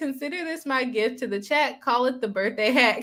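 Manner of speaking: ordinary talk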